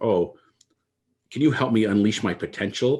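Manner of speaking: mock, playful, teasing, poking-fun tone. Retelling a phone caller who was making fun: imitating a mocking tone. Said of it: "he was kinda making fun of me".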